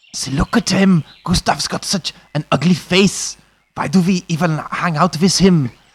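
high, put-on, taunting German accent. Telling a story, narrator voices the children mocking gustav in a german accent. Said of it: "Has to be said with a German accent".

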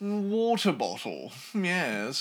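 put-on posh upper-class accent. Mocking how upper-class people nearby say a word: imitating posh upper-class accent. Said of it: "the proper upper class people around here that go".

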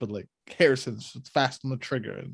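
ordinary talk

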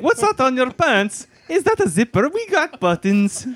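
put-on Pennsylvania Dutch accent on every word.

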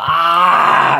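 loud, pained orc cry of pain. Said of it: "Murag just yells out".

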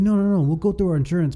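put-on Latin American accent.

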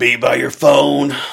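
very loud, blunt, booming delivery. Retelling how Rich Chamberlain talks on the phone, imitating Rich Chamberlain. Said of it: "Is that in a pirate voice?".

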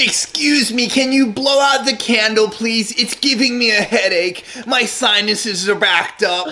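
put-on mocking impression. Retelling what a woman said when she came in yesterday: mocking impression of her. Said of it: "Should we do it with the voice?".

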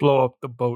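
put-on poor Russian accent, pitched low. Retelling a scene, quoting Chernov in Chernov's bad Russian accent. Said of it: "in her shitty russian accent just goes".

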